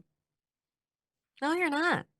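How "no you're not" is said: put-on high, childlike, doubtful voice. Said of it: "they look at me and they go".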